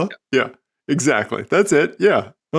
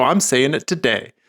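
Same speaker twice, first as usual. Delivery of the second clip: ordinary talk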